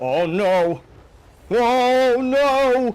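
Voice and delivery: shouting. Reacting to a battle going badly while playing with another player: yelling. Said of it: "Stop yelling! Right in my ear".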